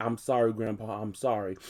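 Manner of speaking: usual speaking voice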